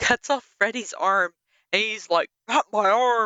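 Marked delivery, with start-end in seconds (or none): 2.5-3.3 goofy, hammed-up cartoon dad voice. Describing a movie scene where Jason cuts off Freddy's arm: goofy Freddy voice. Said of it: "it's like the goofiest voice ever".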